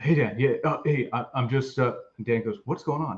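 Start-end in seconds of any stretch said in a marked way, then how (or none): 0.0-1.8 barely audible, very quiet, halting, stumbling voice. Retelling a male caller's words to Dan on the phone, very quiet. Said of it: "it's like a very quiet".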